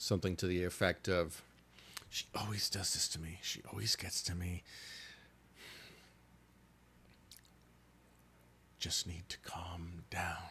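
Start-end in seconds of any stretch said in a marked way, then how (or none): 2.1-10.4 barely audible, faint, breathy whisper. Narrator voicing a woman heard through her door as players walk by, faint whisper. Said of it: "you hear sort of a faint whisper".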